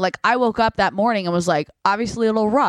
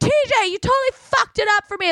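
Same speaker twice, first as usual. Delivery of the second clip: put-on very high, drunken, shouted scream; 13 semitones higher than usual. Retelling a ride home, reenacting screaming at a buddy in the van: retelling a scream. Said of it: "screaming at my buddy TJ".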